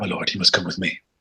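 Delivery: whispered voice. Voicing a castle guard who summons a lord late at night: whispering guard. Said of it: "he'll whisper in your ear".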